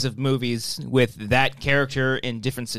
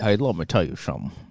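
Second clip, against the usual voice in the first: put-on Southern accent, lower pitch; 6 semitones lower, 3 dB quieter than usual. Asked for a Daniel Craig voice, saying the line: Frank Underwood voice. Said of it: "Not Frank Underwood".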